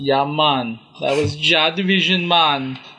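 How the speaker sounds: terrible, bad, put-on Jamaican accent. Announcing the dub track just played, in a terrible Jamaican accent. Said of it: "That's my terrible Jamaican accent".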